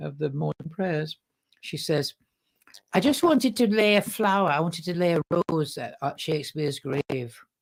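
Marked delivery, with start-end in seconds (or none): 2.9-7.4 put-on thick, laid-on Manchester accent. Quoting what a woman said at the end of morning prayers: thick Manchester accent. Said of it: "thick Manchester accent".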